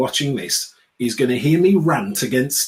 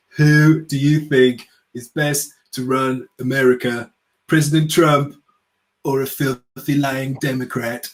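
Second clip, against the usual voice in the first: slow, drawn-out, laid-on put-on accent. Acting out a stacked survey question in a Trump accent. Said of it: "this is my Trump accent".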